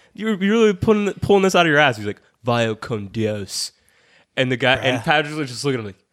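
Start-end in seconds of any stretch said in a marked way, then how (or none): 2.5-3.7 strong surfer-dude voice. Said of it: "he said it in the most surfer".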